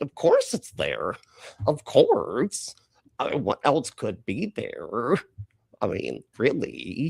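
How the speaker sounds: swooping pitch, slow, drawn-out incredulous delivery. Repeating what Tucker just said: Tucker impression. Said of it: "That's my Tucker impression".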